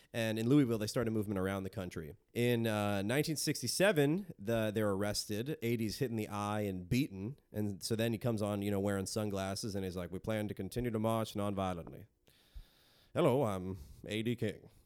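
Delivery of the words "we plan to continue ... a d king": deep, booming voice-of-God delivery. Retelling a civil rights leader's statement after a beating: imitating A D King's deep voice. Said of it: "The voice of God".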